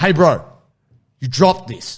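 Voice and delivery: put-on unfriendly tone. Retelling confronting someone who dropped something: retelling speaking very unfriendly. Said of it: "spoke very unfriendly".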